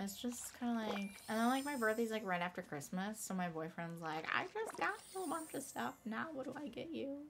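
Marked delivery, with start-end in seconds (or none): 4.3-7.2 put-on high, soft elderly woman voice. Quoting her boyfriend, in an old lady voice. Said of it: "That sounded like an old lady talking".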